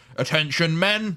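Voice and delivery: loud commanding shout. Speaker voices Tempestor Prime McDowell joining the mission: loud commanding McDowell voice. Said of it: "you hear a loud, commanding voice pipe up".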